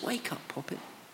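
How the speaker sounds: gentle, loving, tender, very hushed, very soft murmur. Retelling a quiet, private command to a girl: tender. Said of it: "The tenderness".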